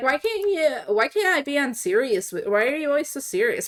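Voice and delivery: acted taunting, jeering tone. Retelling how the supervisors mocked a coworker: imitating someone mocking. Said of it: "And then they mocked him".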